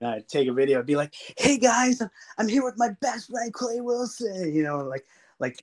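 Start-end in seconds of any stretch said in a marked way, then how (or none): 1.4-4.5 high, obnoxiously positive and upbeat voice. Retelling filming an intro for a video, imitating own obnoxiously positive greeting. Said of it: "being all, all obnoxiously positive".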